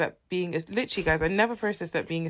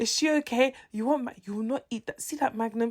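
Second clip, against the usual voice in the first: put-on scolding, higher pitch; 6 semitones higher than usual. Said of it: "She said it in Igbo".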